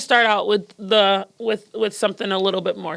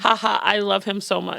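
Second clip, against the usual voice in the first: ordinary talk, nothing marked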